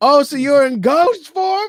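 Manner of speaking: flirty scream, very high and loud. Recapping a scene where Birdie flirts hard: imitating Birdie screaming. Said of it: "Like she's screaming it".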